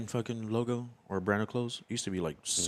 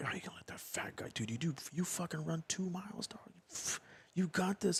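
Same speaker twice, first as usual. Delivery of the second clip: soft, hushed whisper; 8 semitones higher, 8 dB quieter than usual. Retelling egging on a buddy at a strip club: retelling a whisper. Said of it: "I'm whispering in his ear".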